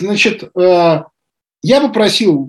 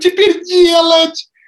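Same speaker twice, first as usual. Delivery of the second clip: very high, weepy, tearful whimpering whine; 12 semitones higher than usual. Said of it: "Смоленский таким плаксивым голосом".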